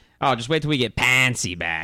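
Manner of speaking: heavy, exaggerated Pittsburgh accent. Imitate a friend's dad talking about the offensive line, in a big Yinzer accent. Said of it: "with a big Yinzer accent".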